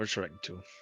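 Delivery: muttered quietly under the breath. Speaking in character as another character heads to bed: under the breath. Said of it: "under my breath".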